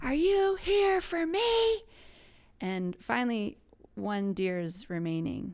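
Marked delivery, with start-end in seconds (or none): 0.0-1.8 loud, very high, hollered yell. Retelling a hunter calling out to the deer: imitating a yell. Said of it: "he yelled again".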